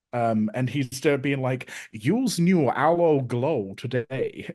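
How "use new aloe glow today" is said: put-on European accent. Describing a man's performance as an old commercial host, quoting him in a weird accent. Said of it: "this really weird accent that he's putting on".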